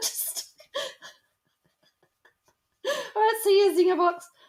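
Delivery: talking through laughter. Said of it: "I can't help it".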